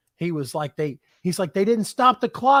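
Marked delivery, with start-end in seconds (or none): 1.5-2.6 acted, belligerent drunk hollering, loud and high-pitched. Retelling what a fan two rows over yelled: imitating someone yelling. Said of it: "a guy two rows over who was yelling".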